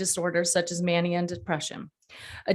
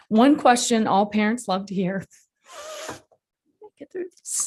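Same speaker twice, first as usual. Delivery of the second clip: crying through the words, with swooping pitch; 2 semitones higher than usual. A parent speaking in support of the Mental Health Parity Act, crying while speaking. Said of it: "It's okay to cry".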